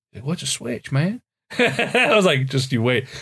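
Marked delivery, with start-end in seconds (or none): 0.3-1.2 put-on Southern accent from Tennessee. Retelling what a guy from tennessee said to him, in a tennessee accent. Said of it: "he's got this accent. He's from like Tennessee".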